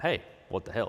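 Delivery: ordinary delivery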